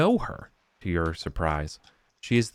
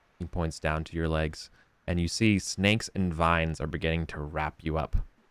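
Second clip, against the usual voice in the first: ordinary talk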